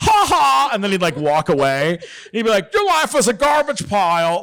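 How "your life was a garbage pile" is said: put-on very high, terrible, mean Long Beach accent. Speaker retells what a mean guy would say about their life, imitating his bad accent. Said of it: "but with the worst accent".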